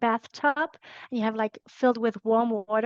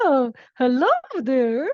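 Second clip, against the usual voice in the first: loud, swooping, classic cartoon mouse voice; 2 semitones higher, 5 dB louder than usual. Joking about suddenly changing how you speak, give a greeting in a Mickey Mouse voice. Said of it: "speaking like Mickey Mouse".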